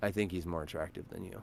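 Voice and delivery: quiet low murmur.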